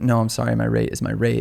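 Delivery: confident, self-assured tone. Retelling a reply to clients who try to negotiate the price: imitating a confident refusal. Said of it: "that gives you the confidence to just be like".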